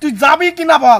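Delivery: loud, furious yelling.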